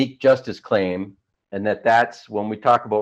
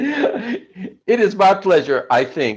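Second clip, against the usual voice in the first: drawn-out words through very high giggles; 10 semitones higher than usual. Welcomed onto a show as a guest, laughing while talking. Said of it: "I'm laughing now".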